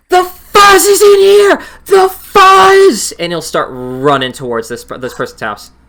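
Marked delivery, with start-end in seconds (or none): 0.1-3.1 very high, booming, shrill, very slow goblin yell. Voicing a fleeing goblin who slams open the door: yelling goblin. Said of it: "you'll hear him yell".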